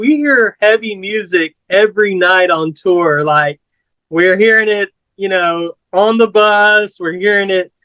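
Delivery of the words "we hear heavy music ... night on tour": usual speaking voice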